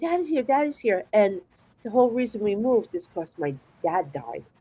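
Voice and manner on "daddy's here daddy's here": mock screaming, high-pitched. Recounting seeing their late father at the foot of the bed, retelling a scream. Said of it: "And I'm screaming".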